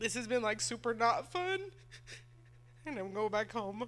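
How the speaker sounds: tearful speech, talking while crying. Talking to viewers before going back home, crying. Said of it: "since I'm crying so much".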